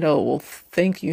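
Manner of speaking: mock sarcastic tone. Retelling a public reply to a woman's post: imitating a sarcastic reply. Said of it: "He was being kind of sarcastic".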